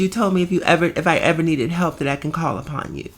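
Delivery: ordinary talk, nothing marked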